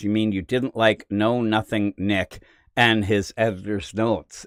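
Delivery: normal talking voice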